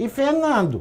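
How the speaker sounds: very high-pitched woman's voice. Reading out a woman's messages obtained by police: imitating Roberta's voice. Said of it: "eu vou tentar fazer a voz dela".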